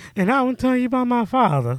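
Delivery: very high-pitched, sweet voice. Showing someone how the shark in Harley Quinn talks, do a sweet King Shark voice. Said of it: "Has that sweet voice. He's like".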